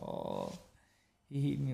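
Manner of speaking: mock, very slow, drawn-out crying whine. Retelling how a beaten person came out crying: imitating someone crying. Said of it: "that person would come out crying".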